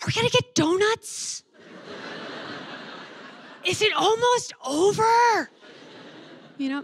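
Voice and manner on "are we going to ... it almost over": put-on very high, loud, drawn-out kid's stage whisper. Describing kids whispering loudly at Mass; imitating a child's loud whisper. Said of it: "I love when little kids whisper".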